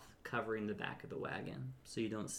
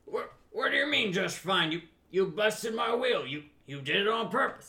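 put-on nervous old man voice, much higher; 10 semitones higher, 10 dB louder than usual. In a story game, an old man answers a stranger from the bushes: nervous old man voice. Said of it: "And the old man says, / Just kind of a little nervous because there's a lot of people with weapons around him and he's just an old man / And the old man says, / And the old man says".

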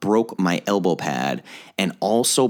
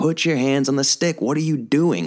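high, raised bellowing yell; 7 semitones higher than usual. Retelling a dad yelling from the bench: imitating a dad yelling. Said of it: "he was literally yelling at me from the bench".

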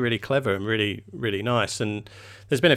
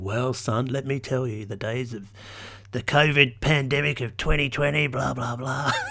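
broad put-on Australian accent, much slower; 3 semitones higher than usual. Imagining someone in fifty years explaining these pictures to his son, broad aussie accent. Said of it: "you sounded so Aussie there".

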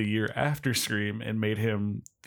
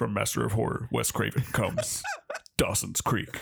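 dramatic horror movie trailer announcer voice. Joking about a horror director's trailer for a teen show: movie trailer voice guy. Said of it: "horror movie and trailer guy".

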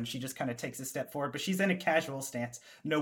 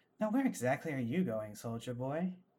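put-on female character voice; 4 dB quieter than usual. Voicing a woman who surprises a soldier from behind: female character voice. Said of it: "a familiar female voice behind you says".

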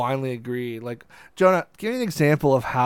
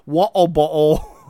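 put-on British accent, louder; 3 semitones higher, 6 dB louder than usual. Showing how fun "water bottle" is to say: British accent. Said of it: "saying water bottle in a British accent".

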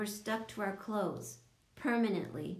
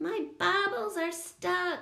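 shrill, very high, drawn-out scream; 10 semitones higher, 5 dB louder than usual. A girl joins the other kids' complaints, screaming. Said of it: "Coco screamed".

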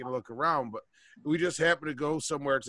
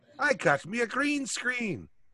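very high, pitched-up storybook leprechaun Irish accent; 9 semitones higher than usual. Mimicking the other speaker's line back at him, leprechaun voice. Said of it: "You sound like a fucking leprechaun".

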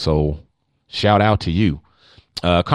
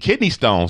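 ordinary talk

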